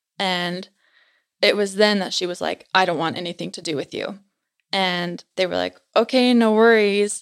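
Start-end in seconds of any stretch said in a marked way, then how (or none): 2.8-4.2 voice sinking a little lower, deeper. Retelling how a woman's tone changed mid-conversation: imitating a deeper voice. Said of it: "her voice dropped and got a little bit deeper".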